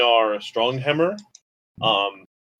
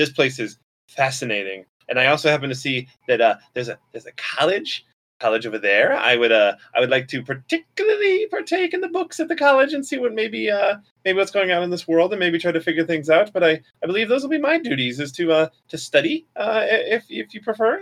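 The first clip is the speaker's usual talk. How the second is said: put-on little gnome girl voice, much higher pitch; 8 semitones higher than usual. Narrator voices a little gnome girl running over to the group, little gnome girl voice. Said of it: "the little gnome girl runs over and goes".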